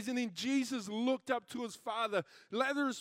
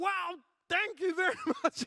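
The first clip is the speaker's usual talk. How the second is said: play-acted annoyed, begrudging tone, pitched up; 7 semitones higher than usual. Retelling another driver forcing out thanks while staying angry; mock-grudging angry thanks. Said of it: "trying to keep his attitude".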